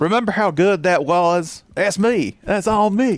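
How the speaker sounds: put-on thick East Alabama accent. Riffing with another speaker, in a thick east alabama accent. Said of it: "that extremely East Alabama accent".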